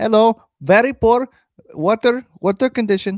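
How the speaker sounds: put-on Indian accent. Talking about nasty water at home in india: put-on indian accent. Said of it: "I try to do an Indian accent".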